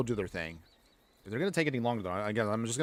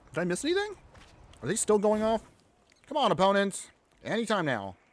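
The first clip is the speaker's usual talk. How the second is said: very high chatter through a mouthful of food; 10 semitones higher, 3 dB louder than usual. Waiting for the opponent's turn, eating while talking. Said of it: "Probably should not be eating and talking".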